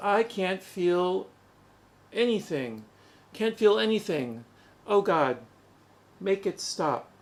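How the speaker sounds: plain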